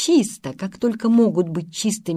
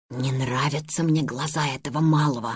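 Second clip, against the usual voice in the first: very low, hushed half-whispered aside; 7 semitones lower, 5 dB quieter than usual. Ludwig, at the back of the procession leaving the room, says this to Karl half-whispered. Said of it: "шепнул он Карлу".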